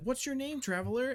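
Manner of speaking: very high, thrilled, super-hyped excited call. Narrator voicing dryads who surround a traveler: super hyped greeting. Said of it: "As they're all like super hyped to see you".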